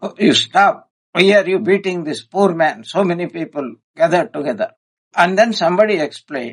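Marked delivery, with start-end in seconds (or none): none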